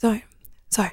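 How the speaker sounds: soft, quiet calling voice. Retelling how Mum came in and woke the speaker: imitating Mum speaking quietly. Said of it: "Mum come into my room really, really quietly".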